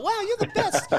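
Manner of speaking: high, laughing, giddy gushing. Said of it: "everyone be like".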